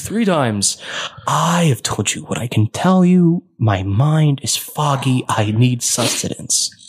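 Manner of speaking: alien creature voice. Voicing a creature asking for food: voicing the creature. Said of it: "It's like".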